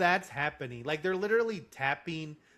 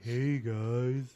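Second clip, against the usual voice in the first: put-on cartoon donkey voice, lower pitch; 5 semitones lower than usual. Imitating a movie character who talks like Eeyore. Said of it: "another one who's, like, Eeyore".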